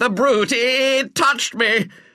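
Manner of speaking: piercing, high, drawn-out scream. A man leaps onto the grand piano after a purring animal rubs his face: screaming. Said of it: "he screamed".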